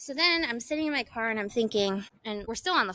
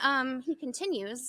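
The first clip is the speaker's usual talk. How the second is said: ordinary talk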